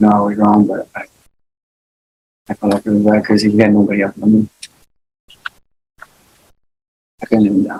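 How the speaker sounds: words trailing off, petering out unfinished at the end. Answering the court after being sworn in: trailing off, lowering voice. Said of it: "you're trailing off and lowering your voice".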